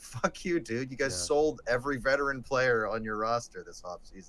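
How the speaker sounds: ordinary delivery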